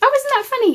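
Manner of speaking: shrill, loud, very high squeaky exclamation. Talking through gifts someone sent, the speaker reacts: high-pitched voice. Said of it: "my uh, voice going high again".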